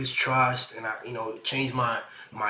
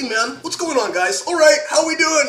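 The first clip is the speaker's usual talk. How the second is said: very high-pitched, very loud voice; 11 dB louder than usual.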